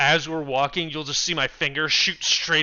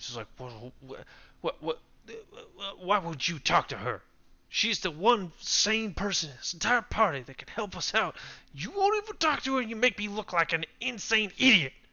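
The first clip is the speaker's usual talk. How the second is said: grumbling, muttered half-whisper under the breath; 3 semitones higher, 7 dB quieter than usual. In character, muttering at a party member beside him, half-whispering under breath. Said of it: "be whispering under my breath at Morning".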